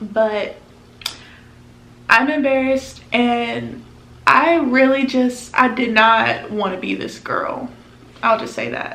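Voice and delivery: very slow speech, holding back tears. Speaker telling how embarrassed she feels right now: trying not to cry. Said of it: "I'm trying not to cry".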